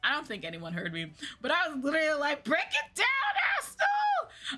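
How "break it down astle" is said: very high, swooping, drawn-out scream. Retelling a concert dance break, imitating own scream. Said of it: "I don't know why the heck I screamed it out".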